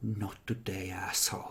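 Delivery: loving, soft, tender hushed whisper. Acting out a character caressing a cross: whispering. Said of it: "whisper to it".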